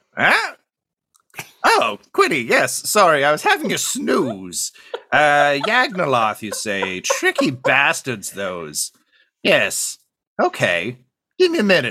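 high-pitched character voice with big pitch swoops. Voicing a sleepy witch answering a summons: Baba Yaga voice. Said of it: "you hear".

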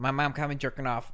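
homemade Chicago accent. Players each say the same line in a guessing game, in a put-on Chicago accent. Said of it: "He's like making his own Chicago accent".

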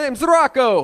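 put-on Jamaican accent. Giving a name to an interviewer while in costume: put-on Rastafarian accent. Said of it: "I also have an accent".

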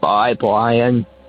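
grave, very solemn cartoon-style voice. Retelling a man who walked in and spoke, using an Elmer Fudd voice. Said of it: "in his best Elmer Fudd voice".

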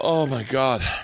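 laughing uncontrollably, too hard. Reacting to something just said, laughing too hard while talking. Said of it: "I'm laughing too hard".

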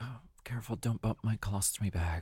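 hushed aside. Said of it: "RuPaul's like".

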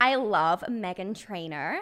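put-on valley girl voice. Asked by the group to give a Valley Girl, the speaker performs: Valley Girl accent. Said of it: "give me Valley Girl".

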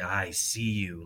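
eerie, creepy, animalistic beast-like voice. Retelling a voice heard during sleep paralysis: imitating an animalistic creepy voice. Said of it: "this very animalistic, creepy voice just say".

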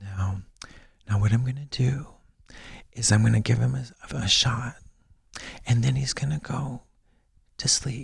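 sweet, gentle, hushed soft-spoken voice. Retelling what Shanna said at the dog's euthanasia: imitating a soft-spoken woman. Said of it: "She talked like this".

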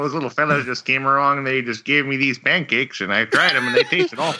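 put-on Northwoods regional accent. Imitating a witness telling his pancake story: Northwoods accent. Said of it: "I can do a Northwoods accent".

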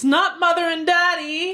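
very high, showy, theatrical wailing moan. Retelling a woman hearing bad news, imitating Cindy's theatrical moan. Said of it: "throws her arms up in the air and moans".

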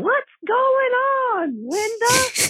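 very high, slow holler, on stretched. Retelling how her great-grandmother called across the room during a proposal, retelling a yell.

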